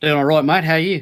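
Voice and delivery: bad, high, loud put-on Australian accent. Greeting the host of a call: dodgy Aussie accent. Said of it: "you and your dodgy Aussie accent".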